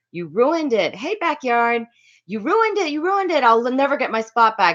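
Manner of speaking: furious, high-pitched angry yelling. Retelling a moment at a concert, yelling at the one who pulled them back: retelling own angry yelling. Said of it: "yelling at him".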